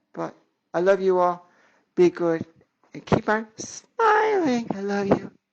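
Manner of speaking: slow, touched, heartfelt, a little emotional. Signing off to his audience, getting a little emotional. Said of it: "I'm getting a little emotional here".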